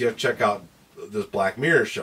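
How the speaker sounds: normal talking voice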